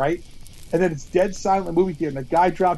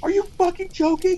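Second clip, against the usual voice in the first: very high, shrill, outraged shriek; 13 semitones higher than usual. Retelling how a woman reacted to a man touching her arm, reenacting screaming. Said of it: "she's screaming at this guy".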